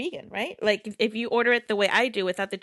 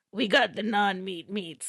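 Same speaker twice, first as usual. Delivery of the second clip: put-on commercial voiceover announcer voice. Imitating an Arby's commercial line as its voiceover: imitating a commercial voiceover. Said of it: "I wanna do that voiceover".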